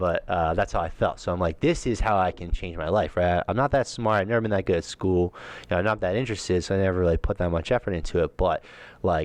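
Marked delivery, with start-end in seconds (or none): none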